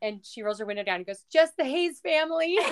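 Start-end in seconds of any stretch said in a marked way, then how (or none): 1.3-2.6 tiny, sweet little voice pitched way up high. Retelling a car ride, the speaker quotes her calling out the window, imitating her sweet little voice. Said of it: "from her sweet little voice".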